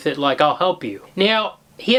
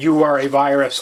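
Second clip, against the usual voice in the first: huge, booming voice of a being from space; 5 semitones lower than usual. Recounting a story where a space creature speaks to humans, booming creature voice. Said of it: "the thing speaks in a booming voice".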